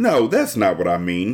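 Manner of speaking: plain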